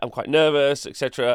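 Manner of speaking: usual speaking voice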